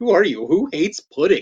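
plain

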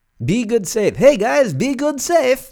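loud, high-pitched Eastern European accent, pushed hard. Signing off to the show's listeners, slipping into a Borat-like accent. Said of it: "I sound like Borat".

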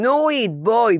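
high-pitched scream. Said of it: "יונה צורחת לי מהרחבת הריקודים".

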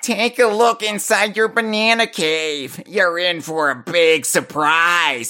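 cranky, dorky nerd character voice. Reading out what Cranky says, in a nerdy 80s-movie Cranky voice. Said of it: "It's like a nerd from an 80s high school movie".

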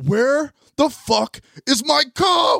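furious, very high, drawn-out, top-of-the-lungs roar. Retelling how a big bald man came in screaming: imitating someone screaming. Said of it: "he's screaming".

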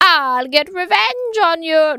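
loud, high-pitched witch voice. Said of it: "That was closer though".

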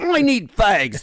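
loud, high, put-on British punk accent. Speaker recalling Gord buying smokes, imitating Gord's British accent. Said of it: "And he talked British".

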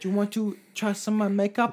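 bad put-on Japanese accent, old lady voice. Acting out an old lady who offers girls makeup, in a bad Japanese woman accent. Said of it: "I'm not very good at a Japanese woman accent".

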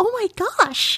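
put-on very high, cute, cartoonish girl voice. Talking to the other podcast host, imitating how a gamer girl talks, gamer girl voice. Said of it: "A gamer girl, right? And she talks like this?".

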